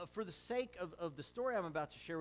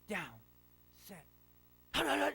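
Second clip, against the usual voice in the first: put-on loud, creaky, small five-year-old's voice; 3 semitones higher, 5 dB louder than usual. A dad retelling a living-room football game with his kids, in a little five-year-old voice. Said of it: "in his little five-year-old voice".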